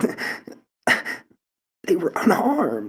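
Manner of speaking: very high, stammering through tears. Narrating a scene, the speaker voices a furious woman, stammering through tears. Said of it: "in the stammering".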